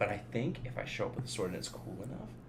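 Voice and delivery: soft, unvoiced whisper.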